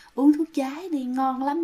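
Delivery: mock-sweet coaxing voice. Retelling how a man coaxed people outside, imitating a sweet soft voice. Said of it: "nói cái giọng im giọng ngọt cái lắm".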